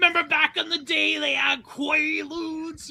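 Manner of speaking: slow, drawn-out character voice, every word dragged. Recalling a remembered video, imitating Kid from Brooklyn. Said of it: "He's like".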